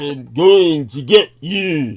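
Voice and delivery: slow, booming, deliberate delivery, loud, word by word. Describing how guests with heavy accents came across: Schwarzenegger impression. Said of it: "coming across like the original Schwarzenegger".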